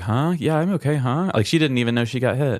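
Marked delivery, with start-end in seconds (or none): 0.0-1.3 dazed, groggy, drawn-out, half-asleep voice. Retelling how a heavy sleeper answered when woken: imitating a half-asleep reply. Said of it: "She's a heavy sleeper, so she was like".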